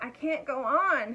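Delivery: very slow, winded, puffing and out of breath. Reading a story aloud, the tired dragon speaks: puffing, out of breath. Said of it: "puffed the dragon".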